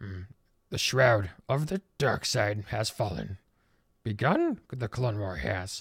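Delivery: deep, sorrowful, soft, subdued voice. Showing different degrees of the Yoda voice: deep, sad Yoda voice. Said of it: "deep, sad Yoda".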